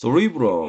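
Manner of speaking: cerebrum with the -re- syllable stressed. Teaching brain vocabulary, choosing one stress option: stress on second syllable of cerebrum. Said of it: "저는 이음절로 발음을 할게요".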